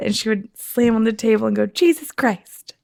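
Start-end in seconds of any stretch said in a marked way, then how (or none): 1.7-2.7 small child's high voice, put-on dad exclamation. Retelling a four-year-old sister's impression of a frustrated dad. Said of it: "do an impression of Dad".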